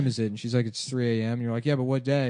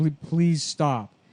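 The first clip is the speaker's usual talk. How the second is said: put-on crying, tearful pleading tone; 3 semitones higher than usual. Retelling what a woman in tears said on the subway: imitating a tearful plea. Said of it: "she's in tears".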